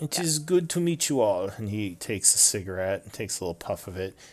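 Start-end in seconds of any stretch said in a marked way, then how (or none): 0.0-1.5 put-on French accent. Voicing a workshop owner greeting the group: French accent. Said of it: "it is a French accent".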